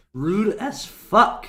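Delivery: loud voice breaking mid-phrase. Teasing someone about their chat delay, voice cracking. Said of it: "Voice crack".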